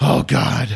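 mock breathless gasp. Imitating Sylvester Stallone dropping a log: imitating winded Sylvester Stallone. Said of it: "he's really winded".

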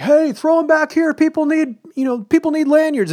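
play-acted, very high, loud shouted call. Retelling how a dude in a convention crowd called for lanyards: imitating someone yelling. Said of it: "one dude who just kept yelling".

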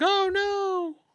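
put-on very high-pitched, loud yell. Voicing a caught character who gets grabbed: yelling in character. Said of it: "Why are you yelling, "Oh, no"?".

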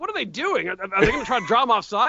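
high, confused yelling outburst.

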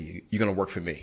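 put-on big, deep male voice. Retelling what a former Steelers player at the table said: imitating a big deep voice. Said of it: "he's got this big, deep voice".

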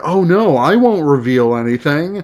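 ordinary delivery

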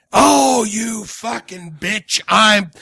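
acted, very slow, drawn-out, angry outburst. Retelling a hidden album track: imitating a man yelling at his wife. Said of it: "he's yelling at his wife".

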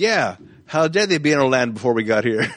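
scornful, sarcastic, indignant tone. Recalling a funny movie line, the speaker quotes it, retelling a sarcastic line. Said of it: "so sarcastic".

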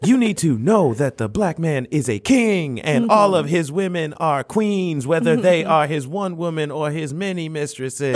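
imitated beat poet delivery. Imitating a Hotep preaching about kings and queens: imitating a faux beat poet. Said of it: "starts talking like a faux, um, beat poet".

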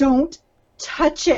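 put-on screaming. Retelling a story where a man screams at a woman, retelling a scream. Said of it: "And he's her screaming".

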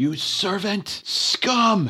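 furious, high-pitched, raging scream. Voicing an enemy in battle who screams at the party: screaming. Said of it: "he screams out".

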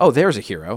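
usual speaking voice

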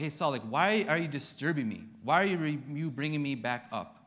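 irritated, annoyed rebuking tone. Retelling Samuel rebuking Saul for bringing him back, imitating Samuel's annoyed tone. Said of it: "some real annoyance in his tone".

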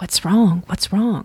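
hushed whisper. After the king shouts for the cook, the hall asks around, whispering. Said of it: "echoed in whispers round the hall".

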